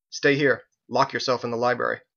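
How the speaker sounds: plain reading voice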